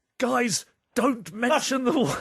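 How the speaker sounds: very high-pitched character voice. Playing a dinner party guessing game, impersonating a guest: John Cleese impression. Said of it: "John Cleese".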